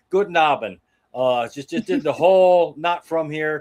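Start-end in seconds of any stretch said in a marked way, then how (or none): 0.1-0.8 thick, really bad German accent. Retelling acting German to a petition collector: imitating own bad German accent. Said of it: "total German".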